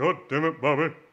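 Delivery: very loud, high-pitched cartoon-dad outburst. After a friend's voice is compared to Hank Hill, the speaker does a Hank Hill impression. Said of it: "I do a very good Hank Hill".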